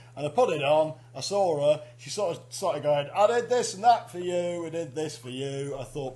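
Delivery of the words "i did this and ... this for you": ordinary talk, nothing marked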